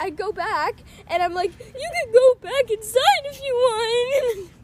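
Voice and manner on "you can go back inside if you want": high, loud, slow hysterical crying and sobbing. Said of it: "crying hysterically".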